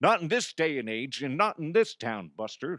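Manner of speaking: put-on cowboy voice with old Western movie drawl. Joking about a player's conduct, speaking like an old Western. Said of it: "you sound like an old Western".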